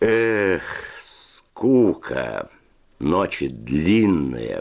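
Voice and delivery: drawled, drawn-out words. Narrator reading a line spoken by Fedya, drawled. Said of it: "протянул Федя".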